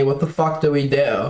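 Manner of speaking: put-on whispered voice. Retelling what someone whispered to the speaker, imitating a whisper. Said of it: "Soul kind of like whispers to me".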